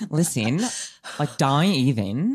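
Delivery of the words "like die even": bad accent sounding a little Kiwi. Urged by another speaker to try an accent, the speaker gives it a go: slightly Kiwi accent. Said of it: "It's a little Kiwi".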